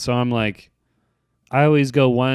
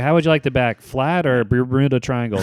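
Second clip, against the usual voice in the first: usual speaking voice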